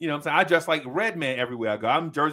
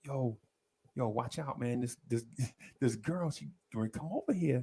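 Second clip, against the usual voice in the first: half-whispered, barely audible, under the breath; 3 semitones lower, 10 dB quieter than usual. Retelling half-whispering a warning to a brother over loud music: retold half-whisper to brother. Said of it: "I'm whispering to my brother".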